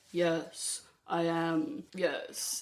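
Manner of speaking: hushed, deep, very slow, drawn-out regal voice. Describing how she copied royal roles: deep, slow, regal voice. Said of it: "talk deep and slow and sound regal".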